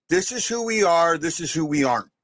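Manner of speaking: plain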